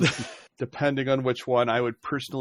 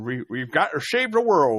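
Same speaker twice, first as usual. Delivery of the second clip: goofy cartoon dog voice; 3 dB louder than usual. Chiming in during a group chat about Scooby-Doo references, in Scooby-Doo voice. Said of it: "in a good Scooby-Doo voice".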